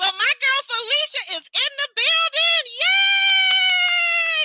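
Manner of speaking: very high, thrilled, rising cheer, yay drawn out. Greeting Felicia's arrival, loud and excited. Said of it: "So yes, I'm loud".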